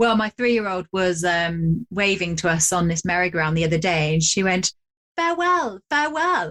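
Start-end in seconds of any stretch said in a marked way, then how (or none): 5.2-6.5 put-on posh English accent, much higher pitch. Retelling a three-year-old waving from a merry-go-round; posh English accent. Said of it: "Very posh".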